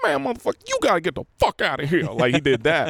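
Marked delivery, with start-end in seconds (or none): 0.0-2.0 rough put-on voice, lively, bouncy, high with wide pitch swings. Retelling a story about Richard Pryor telling someone to leave: Richard Pryor impression. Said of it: "I don't know how to do Richard Pryor".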